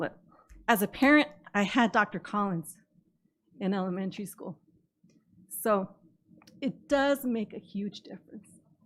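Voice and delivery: moved, halting delivery, voice breaking mid-phrase. A parent comments on school programs, getting emotional. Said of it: "I don't know why I'm getting emotional".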